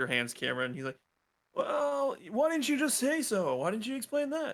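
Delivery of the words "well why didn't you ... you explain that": put-on very high-pitched, baffled, confused old man voice. An old man asks the group why they didn't just say so, confused old man. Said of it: "and he is now the most confused old man you've ever seen in your life. / He looks at you, and he is now the most confused old man you've ever seen in your life. / and he is now the most confused old m".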